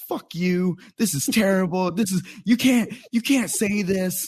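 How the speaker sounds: very high-pitched, aggressive heckling voice. Retelling how a lady stood up during stand-up: imitating an aggressive heckler. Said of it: "very aggressively being like".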